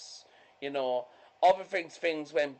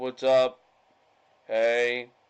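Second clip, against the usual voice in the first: deep, booming hippie persona voice; 4 semitones lower, 6 dB louder than usual. Retelling how she greeted them, imitating her deep voice. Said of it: "she had this, like, deep voice".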